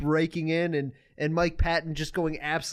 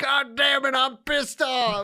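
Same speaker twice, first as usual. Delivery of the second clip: put-on bad old man voice, high and drawn out; 9 semitones higher, 4 dB louder than usual. Retelling a track's spoken bit: bad old man impression. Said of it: "this old man impression go".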